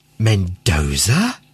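whispering. Reading a man's line in a novel, to the woman who pulled him from a stream: whispered. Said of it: "he whispered".

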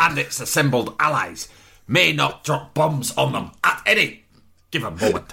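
ranting politician voice. Voicing a father in a film scene who rants at another character: ranting like George Galloway. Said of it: "You sound like George Galloway".

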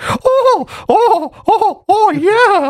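very high, squeaky little cartoon mouse voice. Retelling a Family Guy scene about mice in hotel walls; Mickey Mouse voice. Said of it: "it's like Mickey Mouse's voice".

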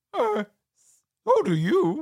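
very high, swooping, drawn-out cartoon dog voice. Retelling a movie scene, quoting Scooby: Scooby-Doo voice. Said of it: "And Scooby replies".

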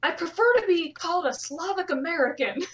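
loud, high-pitched screaming. Retelling a woman in a yelling crowd of runners, acting out her scream over noise. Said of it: "some woman just screams over all the noise".

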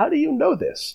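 high, gravelly creak.

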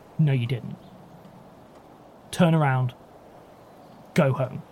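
put-on flat, deadpan delivery. Retelling what a guard told a visitor, imitating a deadpan reply. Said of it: "And just deadpan".

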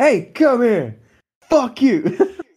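very high, very slow, shrill, swooping hollering. Retelling how an assistant called a woman back: imitating someone yelling. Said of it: "she's down the corridor and she, like, makes her come back".

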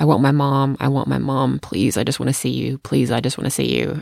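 put-on sobbing. A mother retells her daughter's call from a bagel shop, imitating someone sobbing. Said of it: "she's sobbing".

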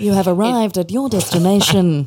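deep newsreader voice. Taking turns doing the navigation voice with others, in a Siri voice like a news reader. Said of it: "mine sounds a bit like a sixty minutes news reader".

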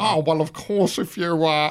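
comedy stock eighties movie-nerd voice. On a podcast, showing the voice they keep slipping into, comedy nerd voice. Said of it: "the comedy nerd voice that people did in the 80s".

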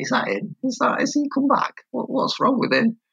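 whispering, pitched very high. Retelling how volunteers whispered about him coming back: imitating people whispering. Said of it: "you can hear 'em whispering".

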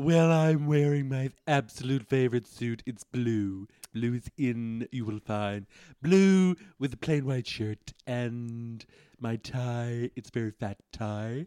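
flamboyant, showy camp delivery, stretched and drawn-out. Answering an interviewer about an outfit as camp Donald Trump. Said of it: "You're sounding very camp, Donald".

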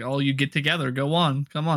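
ordinary talk

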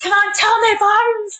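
shout at a very high pitch. Speaker recalling shouting at barnes when the crowd went quiet; retelling a shout. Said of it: "and I shouted".

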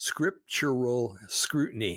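scriptural pronounced slowly and carefully.

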